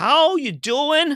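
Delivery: very high, loud, pushed-up delivery. Showing own Joey impression as the better one: Joey impression. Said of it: "almost as good as my".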